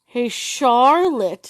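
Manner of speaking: mocking tone, stress on "Charlotte". After crashing into a tree together, he calls to her, mocking, stressing "Charlotte". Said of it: "stressing her name in the mocking tone".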